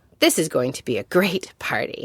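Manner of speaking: ordinary delivery, nothing marked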